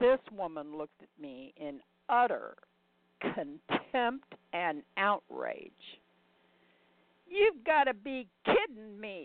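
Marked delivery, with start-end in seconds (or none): 7.3-9.3 put-on blasting loudly in a Brooklyn accent. Narrator voicing a woman staring in contempt and outrage; blasting in a Brooklyn accent. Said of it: "she blasted in her Brooklyn accent".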